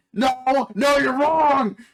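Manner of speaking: very high, very loud, shrill, full-throated screaming. Retelling an argument in which Tectone screams at Nux, imitating Tectone screaming. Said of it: "he's just screaming at Nux like".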